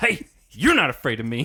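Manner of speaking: put-on aggressive buddy voice. Speaker acts out how a buddy would hit a friend with this line, mock-threatening. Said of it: "sounds like he was going to go after him".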